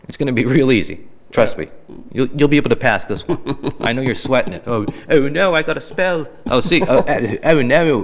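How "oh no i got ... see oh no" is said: put-on British accent, higher, much slower. Host about to spell a word in a game segment, put-on British accent. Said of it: "now I'm doing a British accent".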